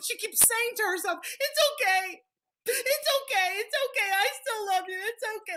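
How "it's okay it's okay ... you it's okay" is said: put-on, tearful, sobbing little-girl voice. Retelling what the crying girl kept saying to herself: imitating a crying girl. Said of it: "She starts crying".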